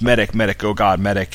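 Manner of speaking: ordinary talk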